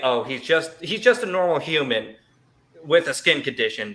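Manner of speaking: ordinary delivery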